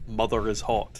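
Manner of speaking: ordinary talk, nothing marked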